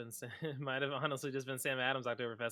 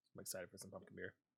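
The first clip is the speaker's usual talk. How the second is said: barely audible, very soft, very quiet, under the breath; 4 semitones lower, 15 dB quieter than usual. Rating beers with another speaker, said really quietly. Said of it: "I just said it really quietly".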